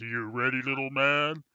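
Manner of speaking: very deep, lowest possible bass voice. Game master voices a huge character greeting the player; very deep voice. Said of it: "deepest voice you've ever heard".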